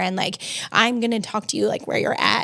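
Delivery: ordinary talk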